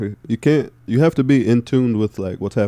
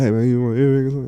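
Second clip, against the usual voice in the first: higher-pitched put-on crackhead speech; 3 semitones higher than usual. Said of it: "talking crackhead talk".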